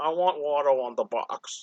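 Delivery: slow, caved-in, froggy voice, sinking and dragging. Imitating George Lucas asking for Watto on the box: George Lucas impression. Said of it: "That's my George Lucas impression".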